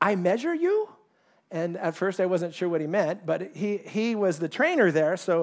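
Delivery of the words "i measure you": pitched-up, put-on Korean accent. Retelling what the Korean trainer at the gym said, Korean accent impression. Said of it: "I'll try his accent".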